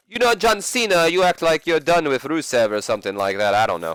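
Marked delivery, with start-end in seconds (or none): 0.1-2.7 deliberately terrible, high-pitched put-on Russian accent. Imagining what Lana might say to John Cena: horrible Russian accent as Lana. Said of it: "Doing a horrible Russian accent".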